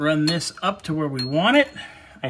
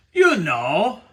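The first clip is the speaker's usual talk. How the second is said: put-on cartoon character voice; 3 dB louder than usual. The speaker, talking about a car part, breaks into a Strong Bad voice. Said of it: "That was my Strong Bad voice".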